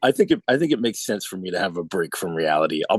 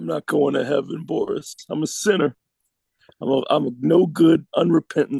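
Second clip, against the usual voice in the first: inconsolable sobbing, much higher; 8 semitones higher than usual. In a scene, speaking to boris, inconsolable sobbing. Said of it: "I'm probably inconsolable at this".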